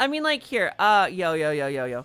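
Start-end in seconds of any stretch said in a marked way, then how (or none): 1.1-2.0 casual, masculine bro-style dude voice. Demonstrating a voice after voice training: masculine dude voice. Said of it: "My uh, my dude voice".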